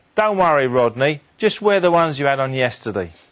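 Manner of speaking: ordinary delivery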